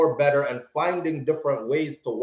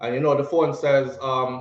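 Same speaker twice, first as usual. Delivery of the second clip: usual speaking voice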